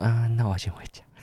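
limp, listless, feeble, no-energy delivery. Retelling what was said when leaving someone's home: imitating own listless voice. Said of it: "有气无力这样子".

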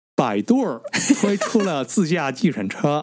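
put-on mainland Chinese accent. Asked by another speaker to say the last news item in a mainland Chinese accent. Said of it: "你要用中国腔说百度".

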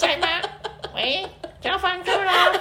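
very high, slow, drawn-out falsetto. Imitating the landlord asking for rent: imitating the landlord in falsetto. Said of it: "那你模仿你的房东讲话".

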